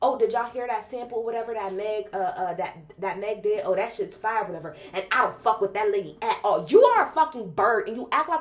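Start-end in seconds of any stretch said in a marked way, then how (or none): 0.0-6.6 acted-out sassy voice, full of attitude. Mocking a critic's comment on a Meg sample: sassy imitation of Joe. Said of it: "You're so sassy to be like".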